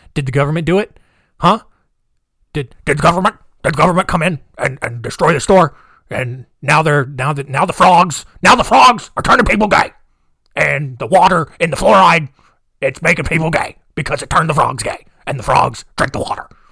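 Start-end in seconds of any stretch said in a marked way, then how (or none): 2.5-16.4 loud, heated ranting that keeps piling on. Wrapping up a weird story with a rant: Alex Jones impression. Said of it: "That was my Alex Jones impression".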